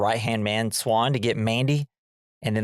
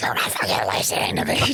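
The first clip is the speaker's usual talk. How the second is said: attempted put-on demonic-sounding voice. Retelling a part where he tries a demonic-sounding voice: put-on demonic-sounding voice. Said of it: "tries to make like a demonic as sounding voice".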